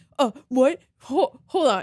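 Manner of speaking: play-acted flustered, stumbling panic, slow and drawn-out. Retelling a first date's reaction to a stranger asking her out: imitating someone freaking out. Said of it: "He was, like, freaking out".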